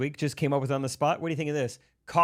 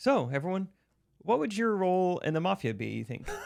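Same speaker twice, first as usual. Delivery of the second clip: sweet, gentle, pitched-up voice; 5 semitones higher than usual. Retelling a question a friend asked everyone: soft-spoken Molly impression.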